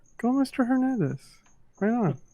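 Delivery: muttered under the breath. Retelling own words while filming a teacher, imitating muttering under breath. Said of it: "so then under my breath".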